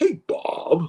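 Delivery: quick, casual, offhand light delivery. Retelling a phone call, imitating Todd Stashwick's greeting. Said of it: "like that".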